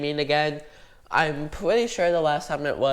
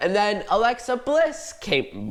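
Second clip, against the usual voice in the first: big voice crack, pitched up, breaking mid-phrase; 5 semitones higher than usual. Recapping a match for viewers, with a voice crack. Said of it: "that was a big voice crack".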